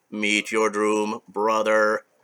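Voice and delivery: mechanical robotic voice, flat and slow. Retelling what the rebuilt red machine says to his brother: robotic, machine-like voice. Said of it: "he says in a robotic, machine-like voice".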